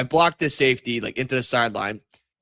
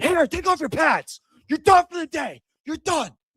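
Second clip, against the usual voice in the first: mock, very high-pitched, yelling coach voice. Retelling a coach yelling at a player to leave: imitating a coach yelling. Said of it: "they're yelling at you".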